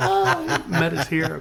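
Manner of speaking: mock, very slow, high, drawn-out, sobbing, tearful bawl. Retelling the mother's reaction at the grade-school walk, imitating her bawling. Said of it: "my mother's like bawling, crying".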